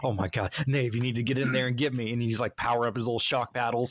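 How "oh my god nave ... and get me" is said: mock-panicked, tense pleading. Retelling begging a teammate to come revive him mid-game, acting out a tense plea. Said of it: "sweating, gripping your controller, going like".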